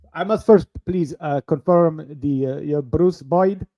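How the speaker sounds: put-on Indian-accented English. Playing a customer service agent on a call, speaking with an indian accent. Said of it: "Are you going to be the Indian guy?".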